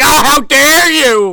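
very shrill, high, loud, drawn-out indignant outrage. Retelling how the snowman reacts when she chews the ice: imitating a pissed-off outburst. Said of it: "He gets pissed off".

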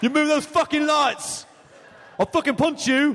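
put-on English-accented speech. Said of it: "Good English accent".

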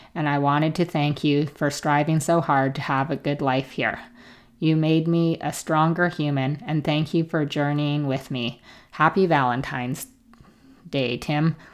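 ordinary talk

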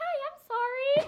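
very high-pitched, very loud, sweet, innocent voice. Retelling facing a man with a gun, acting sweet and unthreatening. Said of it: "I'm so glad I look so unthreatening".

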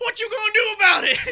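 put-on very high, very loud, shrill yell in American accent. Retelling an actor yelling back during a filmed argument, Ewan McGregor yelling in an American accent. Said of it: "Just yelled back at me".

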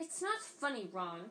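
said sharply, reproving. Reading a story aloud, Hermione scolding Ron for laughing: speaking sharply as Hermione. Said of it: "said Hermione sharply".

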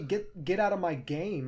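ordinary delivery

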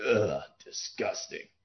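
breathy, whispered stealth-soldier voice. Retelling how the game hero reacts to eating cooked snake: David Hayter impression. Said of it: "That's my, uh, David Hayter impression".

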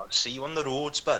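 put-on strong Welsh accent, laid on thick. Quoting a man who threatened to stab him, in a strong Welsh accent. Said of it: "exactly like that".

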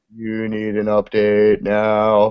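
deep talking-computer voice, "now" drawn out. Describing how their MacBook talks, imitating it in a Stephen Hawking computer voice. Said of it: "it talks in, like, a deep".

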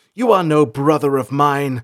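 loud, curt, barked delivery. Salanth rejects the second voice, who has called him brother; barked. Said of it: "Salanth barked".

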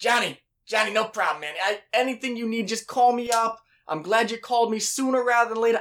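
put-on high, gangster-style New Jersey accent. Retelling what the man he asked about rent said back, New Jersey accent. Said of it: "I don't know why he sounds like he's from, like, New Jersey".

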